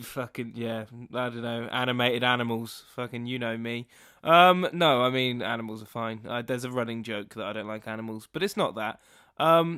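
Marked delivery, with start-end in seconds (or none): none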